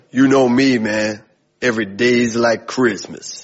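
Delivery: deep, low, slow Southern drawl. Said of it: "So he speaks real deep and real slow".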